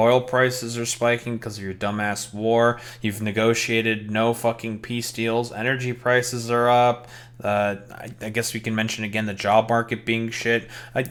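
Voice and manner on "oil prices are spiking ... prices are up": normal talking voice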